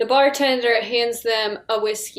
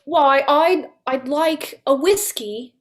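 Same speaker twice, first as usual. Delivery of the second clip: very slow, drawn-out put-on Australian accent; 4 semitones higher, 3 dB louder than usual. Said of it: "they say it in an Australian accent".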